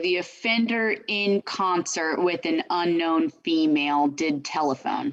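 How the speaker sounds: plain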